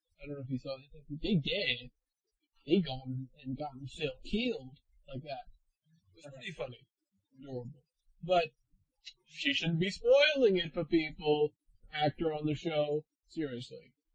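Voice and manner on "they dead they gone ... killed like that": mock American Southern accent. Speaker quoting a show actor's spoiler video, imitating an american southern accent. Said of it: "talking with an American South accent".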